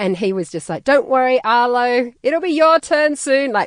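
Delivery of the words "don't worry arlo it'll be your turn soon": very loud, slow, pointed, passive-aggressive delivery. Retelling how a parent spoke at the playground: imitating husband saying it loudly. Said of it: "very loudly".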